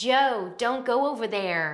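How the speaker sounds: put-on mild, half-hearted American accent, slow. Recalling how she once delivered a line: weak american accent. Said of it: "it was just such a bad American accent".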